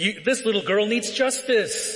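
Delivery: acted, high-pitched strained yelling. Retelling the yard duty lady recounting the story outside the principal's office; imitating a woman yelling. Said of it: "She's like yelling".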